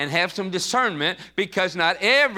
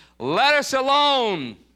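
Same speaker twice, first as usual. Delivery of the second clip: loud, high-pitched outcry; 7 semitones higher than usual. Reading from the Bible, voicing the man with an unclean devil, crying out loudly. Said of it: "he cried with a loud voice".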